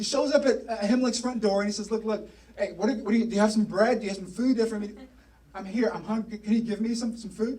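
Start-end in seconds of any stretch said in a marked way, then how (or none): none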